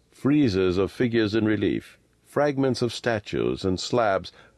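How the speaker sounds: plain reading voice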